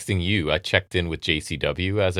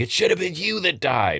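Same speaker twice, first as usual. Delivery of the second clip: mock screaming, pitched very high; 10 semitones higher than usual. Retelling a wrestling storyline where a manager attacks his daughter: imitating someone screaming. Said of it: "he's screaming".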